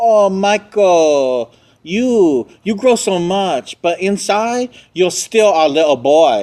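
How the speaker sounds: very high, drawn-out, showy flamboyant voice. Retelling what the boyfriend said on seeing Michael again, imitating a flamboyant man. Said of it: "He was so flamboyant".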